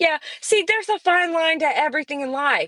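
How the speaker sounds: high, sarcastic, fake-wisdom sage voice. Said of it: "I'm saying this being sarcastic".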